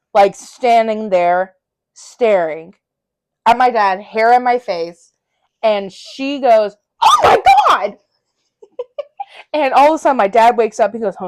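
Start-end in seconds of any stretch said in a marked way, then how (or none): 7.1-8.0 very high, shrill, startled shriek. Telling how mom woke to find the speaker standing there, imitating mom's startled scream. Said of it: "My mom starts screaming".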